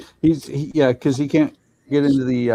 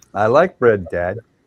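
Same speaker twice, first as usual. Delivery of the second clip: put-on dog voice; 3 semitones lower, 3 dB louder than usual. Voicing what the staring dog Marley is thinking: voicing the dog. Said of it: "He's staring at me going".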